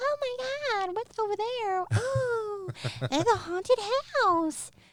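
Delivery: very high, silly, dumb-sounding dopey accent. Demonstrating the accent just described: silly high-pitched accent. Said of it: "having like that accent".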